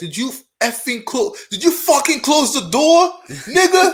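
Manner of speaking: high-pitched, shrill, loud, all-out screaming. Retelling what a lady screamed at a kid: imitating a lady screaming. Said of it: "Who's this lady screaming?".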